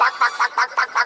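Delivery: put-on clucking like a chicken.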